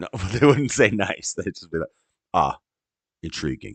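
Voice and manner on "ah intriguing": low, flat, deadpan monotone with no lift. Imitating how engineers talk, the speaker uses a monotone engineer voice. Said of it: "they speak very monotone".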